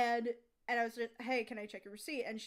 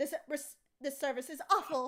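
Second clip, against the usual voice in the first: mock dramatic voice, higher pitch; 3 semitones higher than usual. Retelling a customer storming off from the counter: imitating a dramatic customer. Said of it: "very dramatically".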